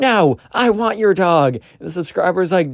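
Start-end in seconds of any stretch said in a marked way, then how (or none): 0.0-1.6 put-on very high, drawn-out kid's yell. Retelling a chase where the kid shouts back: imitating a kid shouting. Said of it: "the Roblox kid shouts".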